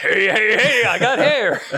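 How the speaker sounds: high, loud, slow, drawn-out excited cartoon call. Retelling an excited find of hair: Fat Albert voice. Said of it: "he goes full Fat Albert and goes".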